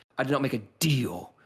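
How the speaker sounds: big, booming, resounding delivery. Describing how a woman backs up her threat, in a booming voice. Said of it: "it's sort of like booming like that".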